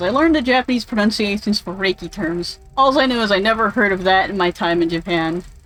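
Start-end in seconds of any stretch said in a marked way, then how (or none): none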